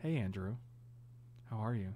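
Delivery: very quiet, low, creepy, hushed murmur. Showing how you'd greet andrew, in a low, creepy voice. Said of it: "you got to do this low, creepy voice".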